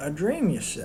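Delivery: soft, flirtatious, flirty delivery. Rehearsing a line over and over until it locks in, flirting. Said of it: "flirting with him?".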